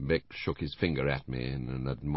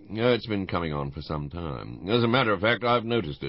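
plain reading voice

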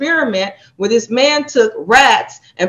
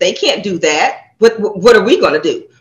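put-on authoritative tone, lower; 4 semitones lower, 3 dB louder than usual. Retelling what people who come to the speaker say: imitating an authoritative tone. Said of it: "they say it in an authoritative".

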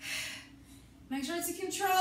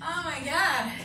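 ordinary talk

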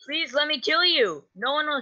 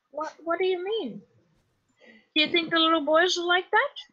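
high-pitched comic creepy mob boss voice. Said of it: "with a very high-pitched voice".

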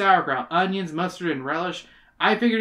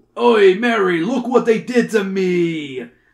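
put-on loud New York accent cry, me drawn out slowly; 3 semitones higher, 7 dB louder than usual. Ben collapses on the park bench beside her, crying out in a New Yorker voice. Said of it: "Ben cried".

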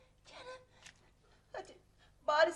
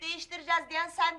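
plain reading voice

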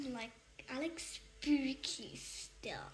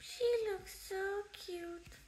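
playful, high, silly put-on funny voice; 7 semitones higher, 3 dB quieter than usual. While drawing a person with paint, the speaker comments in a funny voice. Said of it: "What type of voice was that".

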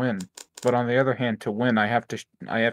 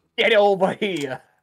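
loud, high-pitched shout in a New York accent; 9 semitones higher, 5 dB louder than usual. Wondering whether anyone would take Scorpion seriously with a New York accent, demonstrating it. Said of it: "if Scorpion had a New York accent".

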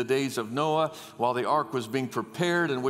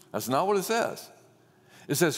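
usual speaking voice

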